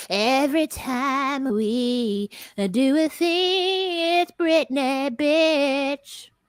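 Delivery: very slow, drawn-out drawl, "we" dragged out. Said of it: "That's my [name] impersonation".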